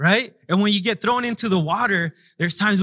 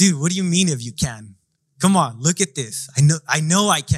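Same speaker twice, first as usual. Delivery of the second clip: put-on sarcastic tone, lower pitched; 5 semitones lower than usual. Imagining answering the father as Jesus, with put-on sarcastic attitude. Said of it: "some sarcasm and be like".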